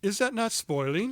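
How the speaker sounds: high put-on British accent. Asking the other speaker a question about soaked papers: put-on british accent. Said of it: "in the British sort of way".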